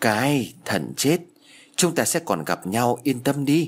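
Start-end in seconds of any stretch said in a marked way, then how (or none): none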